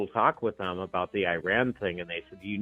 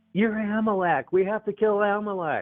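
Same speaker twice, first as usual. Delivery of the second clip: put-on very high, shrill screaming cry; 12 semitones higher than usual. Retelling what people in Israel kept saying: imitating someone screaming. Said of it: "and just screaming".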